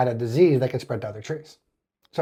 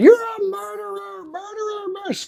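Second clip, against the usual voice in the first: very high, frantic, accusing-sounding ballistic rant, acted. Retelling how a woman berated a man over a tree: imitating a ballistic rant. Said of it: "going ballistic".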